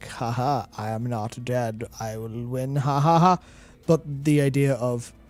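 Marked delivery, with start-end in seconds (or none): 0.1-3.4 very slow, gloating villain voice. Imagining a villain gloating at the players: gloating N'Zoth villain voice. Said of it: "And not in a way of like".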